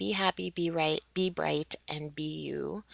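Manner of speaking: ordinary talk, nothing marked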